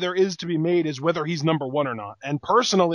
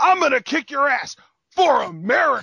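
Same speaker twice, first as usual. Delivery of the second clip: mock overly patriotic, dead-serious angry voice, pitched up; 8 semitones higher, 4 dB louder than usual. Mocking a wrestler's promo: overly patriotic super serious angry voice. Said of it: "Overly patriotic, super serious, angry voice".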